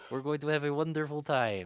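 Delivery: put-on high, loud frog-puppet voice with French accent. Playing a character greeting new crew members, French Kermit the Frog voice. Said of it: "French Kermit the Frog".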